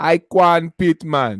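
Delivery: put-on Jamaican accent, loud. Saying what the other man's name would have been before slavery, Jamaican accent. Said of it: "I'm doing a Jamaican accent".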